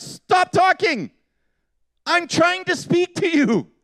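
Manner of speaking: Scottish accent, very high and drawn out. Showing how scottish people would say it: scottish accent. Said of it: "Scottish people would be like".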